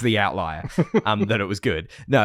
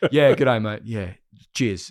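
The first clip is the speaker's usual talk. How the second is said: plain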